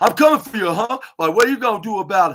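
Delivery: loud, high-pitched, funny shouting. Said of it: "was hilariously shouting".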